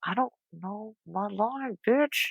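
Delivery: high, very hushed half-whisper under the breath. Recalling forgetting a line onstage, half-whispering to the two girls alongside: retelling a half-whisper. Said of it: "I remember just whispering to them like".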